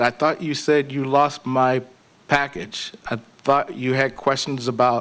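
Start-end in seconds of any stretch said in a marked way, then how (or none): none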